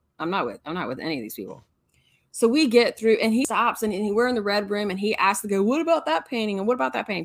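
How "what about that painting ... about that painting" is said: put-on high, quick six-year-old voice with speech impediment. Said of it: "in his wonderful little speech impediment voice, 6-year-old kid voice".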